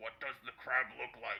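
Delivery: muffled voice as if from behind a door. Voicing the same person behind the door questioning the visitors, muffled voice behind door. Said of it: "you hear the same voice say".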